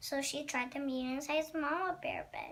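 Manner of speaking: ordinary delivery, nothing marked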